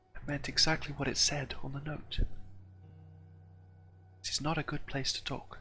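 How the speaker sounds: hushed, very quiet, secretive, confiding whisper. Voicing a scared dancer answering privately during a dance: speaking very quietly. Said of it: "very quietly to you".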